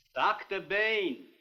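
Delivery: shouting. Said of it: "There's no need to shout".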